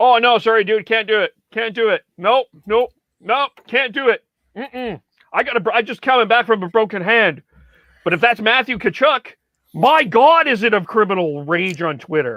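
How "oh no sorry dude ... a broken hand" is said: dismissive, brushing-off tone. Acting out a player turning down a fight: imitating Zach Kassian refusing a fight. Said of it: "Adam Lowry asked Zach Kassian to fight".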